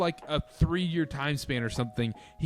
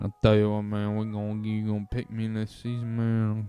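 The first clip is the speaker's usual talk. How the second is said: lazy put-on draft prospect voice, lower pitch; 6 semitones lower than usual. Talking about fantasy draft picks, doing a lazy Xavier Leggett impression. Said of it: "Xavier Leggett impression?".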